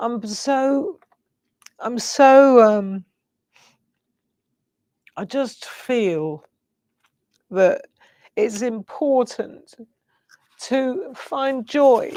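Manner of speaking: tearful, halting, crying voice, breaking. Speaker talking about routines and rituals, crying, voice breaking. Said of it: "Look at me crying".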